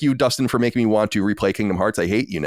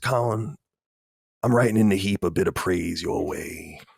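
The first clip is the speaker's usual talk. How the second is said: low, slow, lazy Louisiana Southern drawl; 4 semitones lower, 4 dB quieter than usual. Host reads a listener's letter addressed to colin, reading a letter in the voice. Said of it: "I'm going to read it in the voice".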